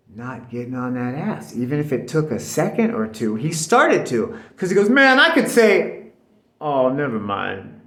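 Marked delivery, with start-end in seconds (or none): 4.9-7.6 drawn out, loud and sing-song.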